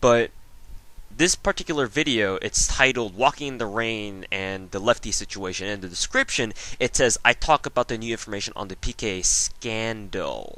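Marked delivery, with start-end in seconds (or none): 7.3-10.6 the word scandal strongly stressed. Reading a video description aloud, stress on scandal. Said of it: "See where I'm putting the emphasis there? Scandal".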